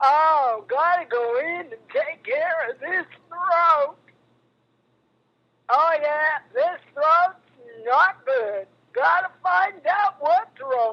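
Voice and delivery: put-on very old cowboy voice, aged ranch-hand way of talking. Retelling a conversation with Don, imitate him in a very old cowboy voice. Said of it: "he sounds like a very old cowboy".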